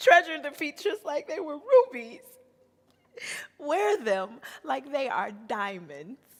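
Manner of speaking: tearful voice.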